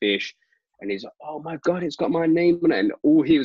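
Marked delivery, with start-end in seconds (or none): 1.2-2.8 mock, high, freaked-out screaming, totally losing it. Retelling how he reacted on finding his sign card inside a fish, acting out screaming. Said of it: "he's screaming, like freaking out".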